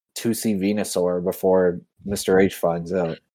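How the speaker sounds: ordinary delivery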